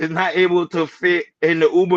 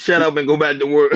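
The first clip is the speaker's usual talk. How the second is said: usual speaking voice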